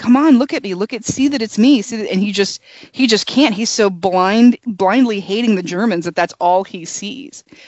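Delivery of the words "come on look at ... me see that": imitated scream, urgent and pleading. Retelling a film character screaming at the pilot he shot down: imitating a scream. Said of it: "moving his head around and screaming".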